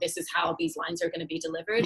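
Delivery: ordinary delivery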